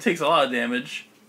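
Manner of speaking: ordinary talk, nothing marked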